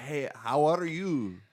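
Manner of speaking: put-on English with a Spanish accent, very slow and stretched. Imitating people who speak English with a Spanish twist: mock Spanish-accented English. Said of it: "they do the Spanish twist".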